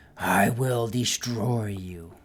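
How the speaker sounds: slow, throaty, guttural monster voice. Describing a flying creature that warns the players, voice its threat in a guttural voice. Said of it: "As it says in this guttural voice".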